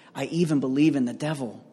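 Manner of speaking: hushed, confiding stage whisper. Retelling how a judge leaned in during an interview: imitating a half-whisper. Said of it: "he leans in and he whispers".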